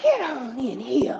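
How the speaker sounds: raspy, scratchy-throated, high-pitched woman's voice. Retelling how a woman welcomed them in at her door, raspy voice. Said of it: "She had a real raspy voice".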